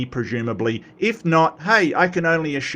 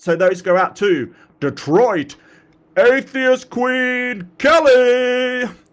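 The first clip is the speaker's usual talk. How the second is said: goofy, very high-pitched announcer shout; 10 semitones higher, 5 dB louder than usual. Sending out a shout-out, stupid announcer voice. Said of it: "I always do this in kind of my stupid announcer voice".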